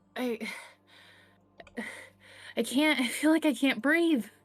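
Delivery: gasping and choking, struggling to breathe, panicked. Voicing a medium character grabbing at her neck: gasping, struggling to breathe. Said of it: "grabbing at her neck".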